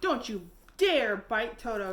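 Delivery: loud, furious, angry scolding shout. Dorothy slaps the lion on the nose for going at Toto, an angry shout. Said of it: "she shouted".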